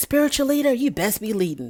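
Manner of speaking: almost serene, placid, unruffled calm voice. Retelling Aunt Liz addressing Lauren's spiritual leader, in an almost serene voice. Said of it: "this almost almost serene voice coming from Aunt Liz saying".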